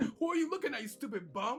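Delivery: put-on, hyped, high-energy loud yell. Retelling sniping in Warzone, acting out yelling loudly at another player. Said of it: "and I got loud".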